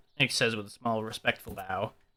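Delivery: normal talking voice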